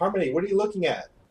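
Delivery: calling across. The speaker calls across to Harmony, who is looking out the same way, calling out. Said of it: "I'm gonna call it to Harmony".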